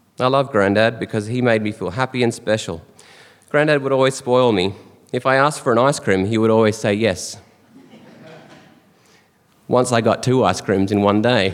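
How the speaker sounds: normal talking voice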